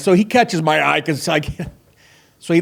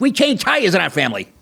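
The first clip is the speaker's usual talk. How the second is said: angry, stern fatherly yell; 3 semitones higher than usual. Stranded after a flat tire, the speaker recalls Tony Soprano yelling at AJ. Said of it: "When he's yelling at AJ".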